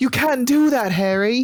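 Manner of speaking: weird-sounding put-on Cockney accent, pitched very high. Complaining that game characters all talk weird, imitating a Cockney accent. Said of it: "they all talk weird".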